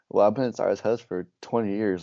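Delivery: normal talking voice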